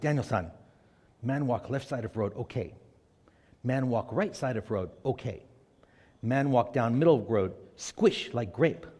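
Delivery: put-on low, shaky, poorly done Japanese accent. Retelling what Mr. Miyagi tells Daniel-san before his training, in a not-too-good Mr. Miyagi accent. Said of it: "My accent's not too good".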